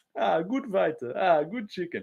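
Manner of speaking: high, very simple-sounding voice. Doing a simple impression after praising another's version: Shamil Gaziev impression. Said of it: "Bedtime's got a decent Shamil on".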